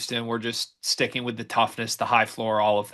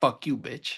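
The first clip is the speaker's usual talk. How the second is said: put-on muttering, quieter; 4 dB quieter than usual. Imagining a quiet player's reaction: imitating Wagler muttering under breath. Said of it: "under his breath being like".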